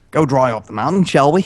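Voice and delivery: put-on, attempted Australian accent. Friends trying out accents in turn, an attempted australian accent. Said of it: "Australian, mm, it's hard".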